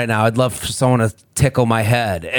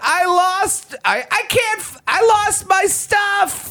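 mock crying kid voice, higher. Retelling a TV show promo clip: imitating a crying kid. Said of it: "the kid's crying".

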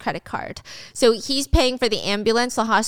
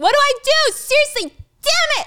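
shrill, very high-pitched, loud yelling; 5 dB louder than usual. Retelling a panicked executive in a conference room: imitating someone yelling. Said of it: "is yelling".

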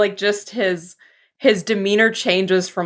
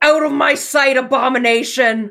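furious, commanding, high-pitched yell; 5 semitones higher, 3 dB louder than usual. As Eli, springing off the table at a beast man in the room, shouting. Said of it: "springs off the table and just shouts".

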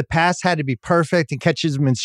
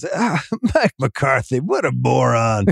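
put-on, vicious, sarcastic announcer voice; 3 semitones lower than usual. Imagining a mean announcer mocking a coach: imitating mean Collinsworth, vicious and sarcastic. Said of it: "really vicious and sarcastic".

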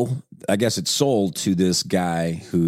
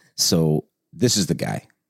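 normal talking voice

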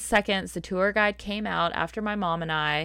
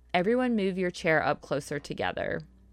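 normal talking voice

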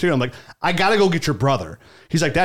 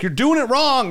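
pitched-up half-shout, near-yell; 9 semitones higher than usual. Parent retelling calling out to their young son out at sea: retelling almost yelling. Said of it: "almost yelling at him".

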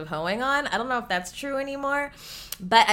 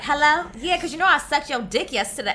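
put-on slangy young woman's street accent; 8 semitones higher, 4 dB louder than usual.

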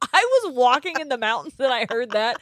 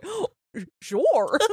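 full dopey cartoon-dog voice; 3 semitones higher than usual. Listing how cartoon characters sound, the speaker does a Goofy voice. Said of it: "Goofy's like".

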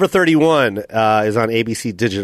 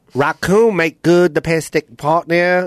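put-on Vietnamese-accented English, higher pitch; 5 semitones higher than usual. Saying the test sentence again, now in a vietnamese accent. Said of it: "Vietnamese accent".

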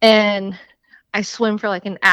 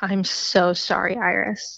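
soft, slow, sighing, drawn-out delivery; 6 dB quieter than usual. Retelling how the boyfriend answered the breakup: imitating a sighing apology. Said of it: "sighs and he's like".

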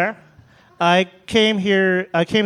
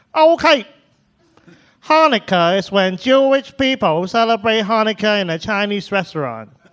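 put-on thick, laid-on Chinese accent; 2 semitones higher than usual. Retelling what he once told classmates about Hanukkah: imitating his own thick Chinese accent. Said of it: "a thick Chinese accent back then".

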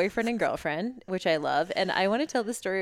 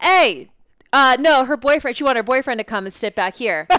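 high, very loud yelling; 6 semitones higher, 10 dB louder than usual. Retelling a passenger calling to friends down a plane: imitating someone yelling. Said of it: "literally yelling all the way down the plane".

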